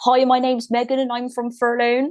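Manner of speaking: put-on West Country accent. Retelling how her brother mocks her interview voice, in a put-on West Country accent. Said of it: "he says that I have a West Country accent".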